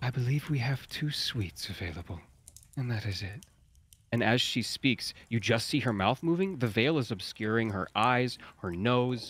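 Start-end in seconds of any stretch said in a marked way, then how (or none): 0.0-3.4 very pleasant, agreeable voice. Narrating, voicing a veiled drow asked how many rooms are left; very pleasant voice. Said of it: "very pleasant voice".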